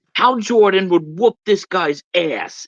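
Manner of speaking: put-on thick, heavy, laid-on New York accent. Retelling what a comic-loving guy said: imitating his thick New York accent. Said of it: "the most New York ac-".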